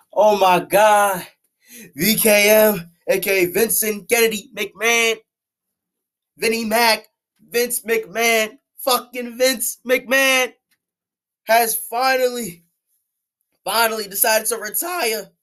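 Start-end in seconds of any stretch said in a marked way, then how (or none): 8.8-15.2 cracked voice, breaking partway through the line. Announcing that Vince McMahon has finally decided to retire, voice cracking. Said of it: "that voice cracked though".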